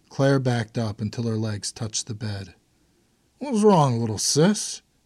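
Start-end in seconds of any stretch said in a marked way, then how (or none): 3.4-4.8 slurred speech, much higher pitch. A man in his room speaks to a girl backing toward the bed, slurred speech. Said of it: "he said with a slur".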